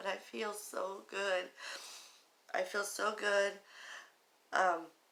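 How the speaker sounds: tearful voice, speaking through tears. Sharing how good they feel after losing weight, crying. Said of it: "I'm crying right now".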